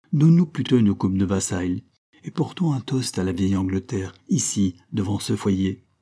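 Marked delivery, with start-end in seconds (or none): none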